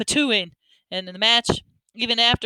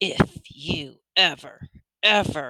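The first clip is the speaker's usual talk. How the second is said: horrible, low, snakelike voice; 5 semitones lower than usual. Reading a story aloud, voicing the mother in a horrible snake voice. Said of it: "Mama's horrible snake voiced woman came out".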